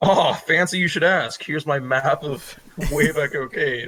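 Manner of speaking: heavy, over-obvious, dripping sarcastic delivery. Answering a player who asks about a map, in character: very sarcastic. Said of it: "that was very sarcastic".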